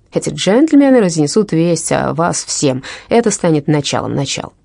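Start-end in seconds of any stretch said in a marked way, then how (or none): none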